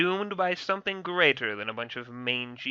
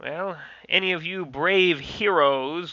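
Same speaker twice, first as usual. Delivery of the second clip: slow, raised, sarcastic voice; 4 semitones higher, 5 dB louder than usual. Asking the other characters who will take the girl home: sarcastic. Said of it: "sort of just sarcastically".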